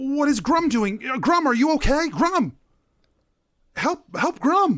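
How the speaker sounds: frantic, panicked, very high-pitched voice. Voicing a character who wakes and sees a companion hurt: panicked plea for help. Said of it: "She turns and she says".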